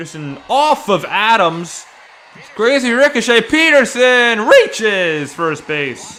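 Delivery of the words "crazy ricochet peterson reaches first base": high, loud, drawn-out call with voice cracking. Calling a baseball game play-by-play, voice cracking. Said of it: "I had a terrible voice crack".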